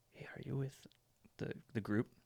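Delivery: soft, breathy, hushed whisper, very close. Retelling a tap on the shoulder from a stranger, retelling a little whisper. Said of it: "I just hear a little whisper".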